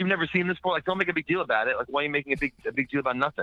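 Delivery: mock irritated, annoyed scolding yell, pitched high. Retelling how a woman yelled at him as he walked by, retelling a woman's yell. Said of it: "she just like yells at me".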